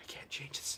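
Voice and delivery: breathy whisper, very quiet, barely audible. Describing his process with a preamp setting, voicing his own thought while whispering. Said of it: "that's me whispering".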